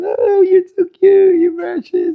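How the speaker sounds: very high, high-toned female voice. Imitating a woman talking to a picked-up baby: high-pitched female voice. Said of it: "female voice, high pitched, high tone".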